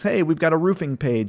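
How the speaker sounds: ordinary talk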